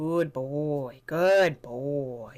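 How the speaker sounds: calm, low, unexcited monotone, very slow. Demonstrating praise for a dog in training, the speaker says it calm and quiet. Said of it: "saying calmly and quietly".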